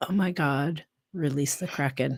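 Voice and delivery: put-on muttering under the breath. Retelling what the president muttered at a board meeting: imitating someone muttering under breath. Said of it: "muttered under his breath".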